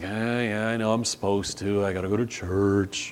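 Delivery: quiet, reluctant, begrudging grumble.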